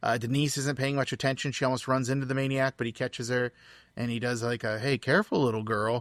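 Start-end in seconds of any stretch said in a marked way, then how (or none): 4.8-6.0 play-acted creepy yet concerned, caring tone. Retelling a film scene where the maniac catches a girl: imitating a creepy yet concerned tone. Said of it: "it sounds creepy, but it also sounds concerned".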